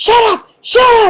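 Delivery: very high shrill yell. Retelling yelling over a shoulder at the children: imitating own yell. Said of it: "yell over my shoulder".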